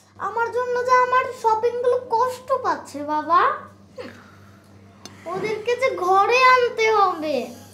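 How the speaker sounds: put-on whining childish voice.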